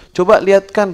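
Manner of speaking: loud, high-pitched dying man voice, calling.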